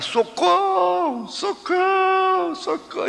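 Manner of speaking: acted, very high-pitched, repeated cries. Retelling a girl's story of being grabbed at the fountain, imitating her screams for help. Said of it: "ela começou a gritar".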